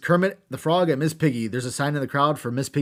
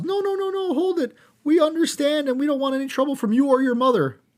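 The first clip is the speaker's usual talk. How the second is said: very high, yelled out; 12 semitones higher than usual. Retelling a wrestling segment with the Muppets: Kermit yelling. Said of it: "Kermit yells".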